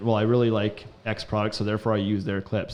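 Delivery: ordinary talk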